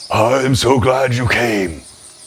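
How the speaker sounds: gruff, rough-edged voice that carries. Narrating a scene in the woods, a voice speaks: gruff but soft. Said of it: "a gruff voice that seems to carry but remain soft".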